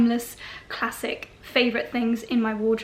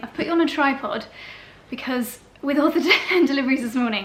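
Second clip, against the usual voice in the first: out of breath. Filming a fashion unboxing on a tripod after morning deliveries, speaker is out of breath. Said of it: "I am out of breath".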